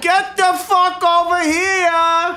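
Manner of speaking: put-on New Jersey accent. Retelling own words to a friend in a put-on New Jersey accent. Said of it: "a lot of that accent happening today".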